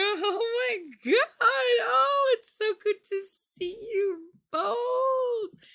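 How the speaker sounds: very high, squeaky, drawn-out put-on politeness. Admitting how they sound when forcing a greeting, imitating own fake high voice. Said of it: "my voice goes really, really high".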